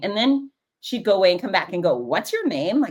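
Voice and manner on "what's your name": dismissive, offhand, can't-be-bothered brushing-off tone. Retelling a woman repeatedly asking a name: imitating a dismissive tone. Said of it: "in a really kind of dismissive way".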